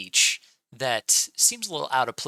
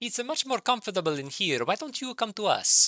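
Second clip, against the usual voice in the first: very high voice calling out from afar; 10 semitones higher than usual. In a mine, a hidden voice calls back to the group, calling out. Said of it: "you hear a voice call out".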